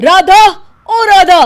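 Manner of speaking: furious yelling. A man back from the office suddenly calls out to the woman at home, angry shouting. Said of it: "चिल्ला क्यों रहे हो?".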